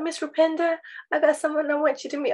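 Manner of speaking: terrible fake American accent. Retelling what a woman who called her Miss Rupinder said, worst American accent. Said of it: "the worst American accent".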